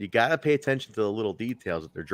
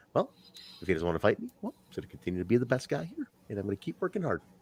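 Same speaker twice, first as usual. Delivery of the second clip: earnest, sweet, wholesome nice-guy voice; 6 dB quieter than usual. Imitating a wrestler who talks like a sweet, wholesome guy. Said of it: "he talks like just a sweet guy".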